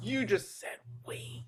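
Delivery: hushed whisper. Shushed in a library after an outburst, a character answers in a lowered voice. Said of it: "Riley lowers his voice".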